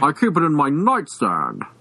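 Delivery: put-on Mid-Atlantic accented speech. Retelling what a customer at the gun store said: Mid-Atlantic accent.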